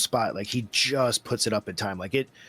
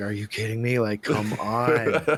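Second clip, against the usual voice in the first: put-on winded, breathless voice. Retelling a tired wrestler's complaint mid-match: imitating winded Dax. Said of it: "so winded".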